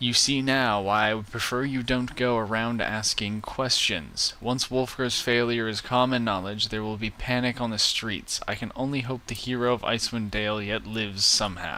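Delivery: ordinary delivery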